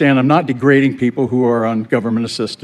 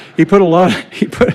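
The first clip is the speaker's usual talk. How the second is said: pitched-up talking through giggles and laughter; 6 semitones higher, 3 dB louder than usual. Speaking to the audience and laughing at own joke, laughing while talking. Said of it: "I'm laughing at my own jokes".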